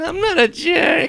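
shrill, high, loud weaselly squeak. Joking with friends about The Mummy, answering in a Benny voice. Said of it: "Why do you sound like that".

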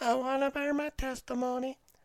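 very high, squeaky puppet dummy voice. Mocking a kid repeating the mom's whispered testimony, Jeff Dunham puppet voice. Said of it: "Jeff Dunham puppet".

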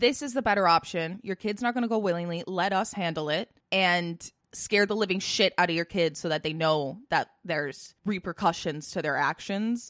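ordinary talk

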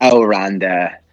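put-on Valley Girl voice. Complaining about how Nia talks on Raw: Nia Valley Girl voice. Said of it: "Valley Girl".

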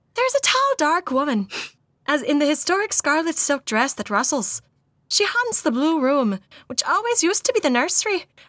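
put-on Irish accent. Reading out Mildred Darby's words from an article: slightly higher pitched Irish accent. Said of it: "slightly higher pitched Irish accent".

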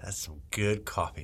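whispered, hushed, breathy commercial announcer voice. On a retake after being asked to sound better, commercial voice. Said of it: "Can you sound a little bit more better?".

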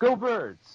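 yelling out, high and loud.

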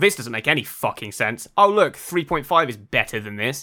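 ordinary delivery

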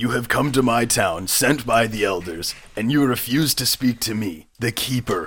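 in-character orc voice. Game narrator voicing the orc keeper confronting the players, in an orc keeper voice. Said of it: "He's an orc. / And he comes over to you and he grabs you by Morty's robe that you're wearing. / the keeper".

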